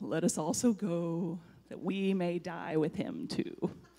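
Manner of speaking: mopey donkey voice. Retelling a Bible story, voicing Thomas's line in an Eeyore voice. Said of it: "it's 100% an Eeyore voice".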